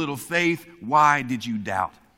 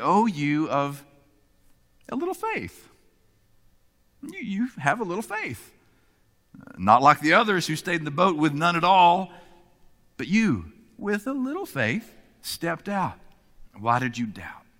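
put-on kind, gentle, encouraging, affirming inflection; 3 semitones higher than usual. Reading Peter's verse as Jesus, with a different inflection: Jesus speaking gently, not condemning. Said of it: "the voice of Jesus with a different inflection".

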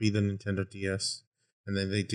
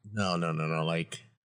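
ordinary talk, nothing marked

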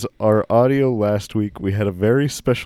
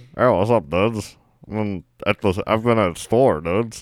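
put-on casual voice. Imitating a guest's usual way of talking: classic David voice. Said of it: "that classic David voice".

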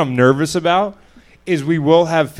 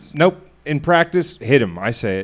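normal talking voice

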